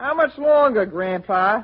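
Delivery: put-on Southern accent. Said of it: "when you put on that southern accent of yours".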